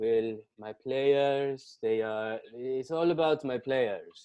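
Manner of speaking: put-on Italian accent, slow and drawn out. Imitating a soccer coach starting an interview: put-on italian accent. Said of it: "doing his best Italian accent".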